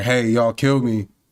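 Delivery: ordinary delivery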